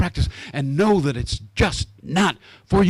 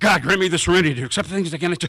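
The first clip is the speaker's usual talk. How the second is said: rapid-fire, much faster. Acting out his own past words in a moment of need, saying it really fast. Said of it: "saying it really fast".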